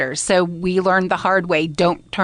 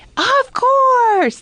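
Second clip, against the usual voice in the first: put-on very high, shrill squealing cry; 5 dB louder than usual. Retelling how a little boy answered as they left the building: retelling a boy's scream. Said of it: "like at the top of his lungs".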